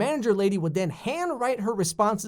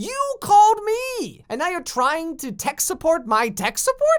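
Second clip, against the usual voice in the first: high, loud sputtering outburst; 9 semitones higher, 5 dB louder than usual. Retelling a tech support call, the speaker acts out sputtering at the caller.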